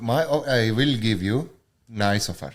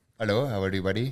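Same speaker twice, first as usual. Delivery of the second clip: put-on Indian-accented character voice; 2 semitones lower, 5 dB quieter than usual. In a skit about selling a couch, the buyer calls the seller in an Indian accent. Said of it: "I mean Indian".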